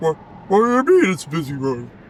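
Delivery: goofy, silly dog voice. Speaking for his dog that wandered onto a busy road, in a dog voice. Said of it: "This is my this is my dog voice".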